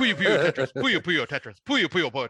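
tongue twister said fast while laughing. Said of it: "Say that, like, four times fast".

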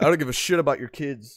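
normal talking voice

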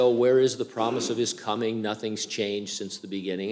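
plain

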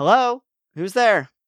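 high, loud yelled voice. Voicing a character who yells down at arriving guests: yelling down from upstairs. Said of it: "a voice yell down".

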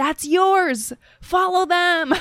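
loud, high-pitched yelling.

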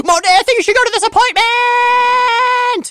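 shrill, ear-splitting, very high, loud shriek. Imagining how he would persuade her, acting out his high-pitched screaming. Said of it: "All high-pitched".

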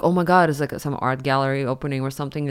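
ordinary talk, nothing marked

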